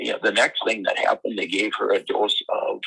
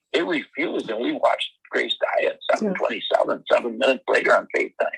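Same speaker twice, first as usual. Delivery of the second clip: ordinary delivery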